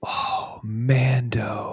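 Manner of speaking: put-on hushed childlike awe. Parent retelling what a kid said on seeing him, imitating a kid's awed under-breath murmur. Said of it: "like under his breath, like he was like in awe".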